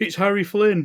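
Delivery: flustered high-pitched shout at the top of lungs. Retelling a gaming session, imitating a flustered friend: retelling a full-voice shout. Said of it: "shouted out at the top of his voice".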